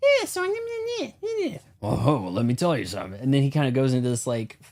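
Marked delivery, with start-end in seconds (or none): 0.0-3.2 high, swooping, storyteller-style pitch. Showing how a talk show host talks: Jay Leno impression. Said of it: "Jay Leno does this thing where he's like".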